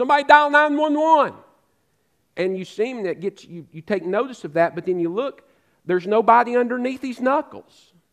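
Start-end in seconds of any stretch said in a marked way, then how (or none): 0.0-1.3 loud yell, raised and pitched up high. Describing a man doing CPR on nobody, retelling a man yelling. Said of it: "he starts yelling".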